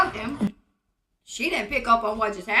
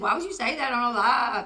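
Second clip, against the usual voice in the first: ordinary talk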